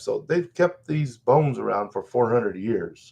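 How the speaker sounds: ordinary talk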